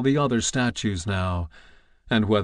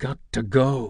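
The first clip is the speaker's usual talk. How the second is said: whispering, slower. Ordered by Douglas to freeze in a game, [name] speaks: whispered. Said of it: "he whispered".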